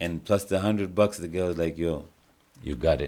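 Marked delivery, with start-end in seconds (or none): 1.8-3.1 imitated Indian accent. Retelling what the guy who took him around said: Indian accent. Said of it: "With the Indian accent".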